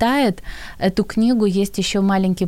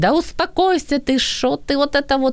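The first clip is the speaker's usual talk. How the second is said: pitched-up, dismissive, humiliating, belittling tone; 7 semitones higher than usual. Showing how the phrase 'calm down' can be said to insult someone, insulting, belittling tone. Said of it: "его оскорбить, унизить".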